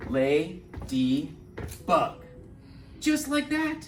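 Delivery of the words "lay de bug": slow, syllable by syllable "lay-de-bug". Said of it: "We say".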